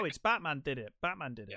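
plain

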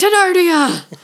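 high, loud mock excited cry. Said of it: "I was like".

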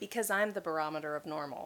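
plain

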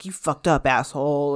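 imitated angry male voice. Retelling what a film character says to Jim: imitating an angry man. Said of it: "he's so angry at Jim's like".

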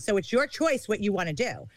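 put-on mob-like mobster tone. Retelling own words on a phone call about owed money: mob-like threat. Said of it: "I sounded like the mob on the phone".

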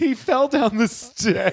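mock piercing, very high-pitched, shrill screaming. Recounting a night holding a blood-soaked towel, retelling own screaming. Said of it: "Just screaming".

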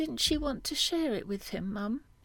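drowsy, sleepy, half-asleep voice. A daughter asks her mum a question, in a sleepy voice. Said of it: "Mia asked in a sleepy voice".

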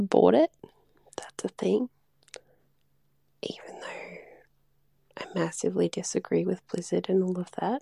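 hushed whisper. Opening a recorded message about a game, whispering. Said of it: "I assume she's whispering".

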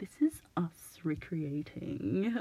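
prim, proper, very slow and drawn out. Retelling a comedy sketch's opening line: prim and proper Eric Idle voice. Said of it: "very prim and proper".

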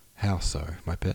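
usual speaking voice

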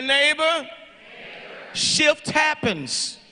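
very slow, deliberate, drawn out word by word. Speaker shows listeners how to say it to their neighbor, spoken slow. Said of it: "Say it slow".

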